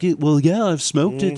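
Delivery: matter-of-fact, offhand, straight delivery. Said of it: "You really love doing this [name] impression".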